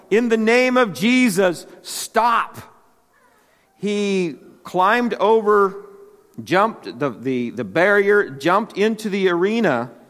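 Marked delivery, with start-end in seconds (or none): 0.1-2.5 put-on, high, slow, drawn-out shout. Telling a story of a man rising from his seat in an arena, retelling someone yelling. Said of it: "He's yelling".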